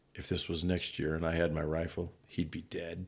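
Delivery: soft, hushed half-whisper, close to the ear. Retelling a hunt, the speaker quotes Reed leaning close, half-whispering. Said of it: "he whispers".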